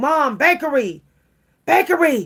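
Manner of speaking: high-pitched, desperate, begging tone of voice. Retelling begging Mom at the grocery store bakery: imitating own desperate craving. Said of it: "it was like I was a crackhead".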